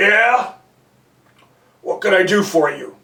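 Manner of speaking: rough, gruff, deep man's voice. Retelling how Jeff knocked on Mister Green's office door, doing Mister Green's gruff voice. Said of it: "Mister Green seemed to have this gruff voice".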